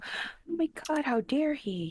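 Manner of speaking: high, drawn-out, deliberate speech. A player's character, alone at the edge of the street, reacts in a quiet mutter. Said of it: "I say this quietly to myself and go".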